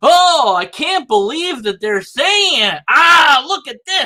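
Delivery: very high, indignant, outraged yelling. Imitating a video maker reacting to a claim: imitating someone yelling. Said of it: "he's, like, yelling about it".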